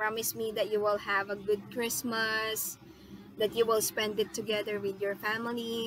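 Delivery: plain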